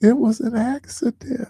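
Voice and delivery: very high, sweet, tiny innocent voice. Retelling what she said after he told her to stop playing, softest little voice. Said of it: "She just went at the softest little voice".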